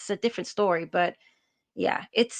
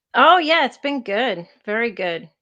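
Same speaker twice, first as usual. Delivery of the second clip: sarcastic tone, louder; 3 semitones higher, 6 dB louder than usual. Asked by the podcast co-host how things are going, answering sarcastic. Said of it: "in a sarcastic way?".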